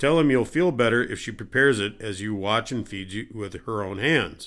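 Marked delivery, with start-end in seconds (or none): none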